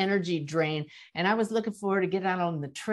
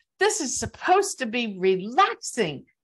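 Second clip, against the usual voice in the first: mock cranky, irritable, fed-up tone said aloud; 4 semitones higher than usual. Speaker recounts thinking out loud on a jarring bike trail; retelling own irritable remark. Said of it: "I was really irritable".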